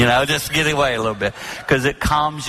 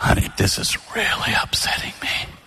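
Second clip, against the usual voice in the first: soft, lowered to half volume; 3 semitones lower than usual. Retelling what the speaker said to Jane, said really softly. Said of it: "lower it to half your normal volume".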